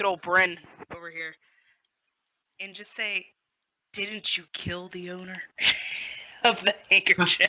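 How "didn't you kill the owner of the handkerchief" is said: whispering in character, lower pitch. Leaning over in character to ask a companion quietly: whispering in character. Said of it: "I would like to whisper over to".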